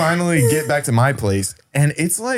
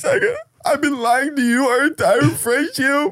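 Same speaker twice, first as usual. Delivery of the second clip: mock very high-pitched blubbering and sobbing through tears; 11 semitones higher than usual. Retelling a friend's sudden confession, imitating Jared crying. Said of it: "He's just belligerently crying".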